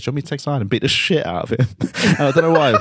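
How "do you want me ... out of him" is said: put-on bone-dry, fast, casual deadpan throwaway. Describing a movie scene with Charlie Sheen: retelling Charlie Sheen's deadpan line. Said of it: "And just very deadpan".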